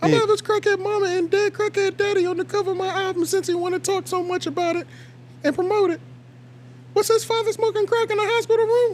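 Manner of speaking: put-on girly voice, very high and feminine. Reading someone's words aloud, the speaker uses a put-on feminine voice. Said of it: "the right amount of estrogen".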